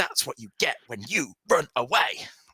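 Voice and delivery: half-shouted, mild, cruel, jeering voice. Voicing a man whipping a woman after a failed attack: shouting. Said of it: "he's just shouting".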